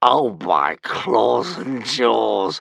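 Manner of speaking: drawling, very slow. As the boys roar with laughter, a saber-toothed dragon remarks, drawling. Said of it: "drawled One Eye".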